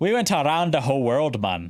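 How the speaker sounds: put-on attempt at an accent, landing Jamaican. Trying for an Irish accent that comes out as a put-on Jamaican accent. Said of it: "Nope, that's Jamaican".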